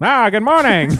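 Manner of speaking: put-on very high, very loud old-time transatlantic announcer voice. Mocking how old radio hosts were required to sound, in a transatlantic radio accent.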